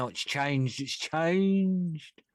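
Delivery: high, excited, mock gushing voice.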